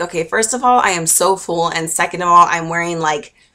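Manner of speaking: normal talking voice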